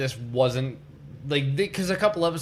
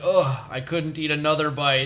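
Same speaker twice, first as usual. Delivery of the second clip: normal talking voice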